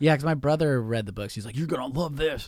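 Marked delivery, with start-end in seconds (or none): 1.6-2.5 hyped-up pro wrestler promo voice. Retelling what a brother said about the books: imitating brother as a wrestler. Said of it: "apparently he's a wrestler".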